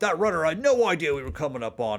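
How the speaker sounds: high, grumbling, growling orc voice. Reading a character's line as he turns from the ship controls, 40K orc voice. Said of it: "more of like a like a forty K orc voice".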